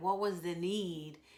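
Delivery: plain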